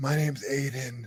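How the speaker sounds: soft, hushed ASMR-style voice. Speaker mocks how people talk at a community meeting, in a soft ASMR voice. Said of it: "they try to talk in this soft, freaking A S M R voice".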